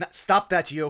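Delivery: loud, high, echoing shout.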